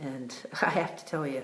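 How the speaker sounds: choked up and teary, laughing through tears. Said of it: "it really teared me up".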